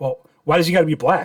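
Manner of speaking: feigned dead-serious voice. Retelling a prank reply to a guy in a car, mock-serious voice. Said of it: "I do this with a serious serious ass voice".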